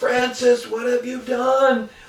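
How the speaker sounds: put-on, all-out, high teacher scream. Recalling chaos among kids, quoting a teacher shouting at a boy: retelling a teacher screaming. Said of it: "one of the teachers just screaming".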